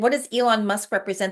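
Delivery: ordinary talk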